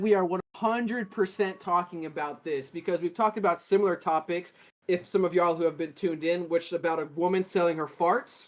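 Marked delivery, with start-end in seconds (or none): none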